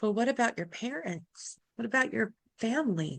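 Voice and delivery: soft, small, shaky, trembling voice. Recounting a second voice in their head, imitating a shaky little voice. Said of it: "and this shaky little voice".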